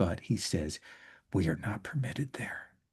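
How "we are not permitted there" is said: under breath, much quieter and lower. Voicing a game character near a bunker, Sequent Dozen under his breath. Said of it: "He says this under his breath".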